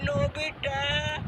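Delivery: weary, slow, soft, drawn-out stretched calling.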